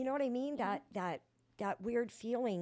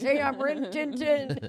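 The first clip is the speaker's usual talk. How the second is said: put-on boozy, drunk-sounding voice; 4 semitones higher, 10 dB louder than usual. Retelling an introduction at meetings: imitating own drunk self. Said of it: "Like I was drunk in the meetings".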